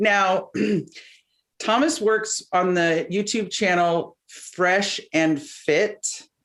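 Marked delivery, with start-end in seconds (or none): 4.3-6.1 unhurried, careful, slow and deliberate, word by word. Stating a YouTube channel's name, said slowly and deliberately. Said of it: "I'm saying that slowly".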